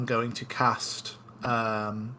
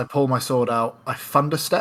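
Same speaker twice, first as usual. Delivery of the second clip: ordinary delivery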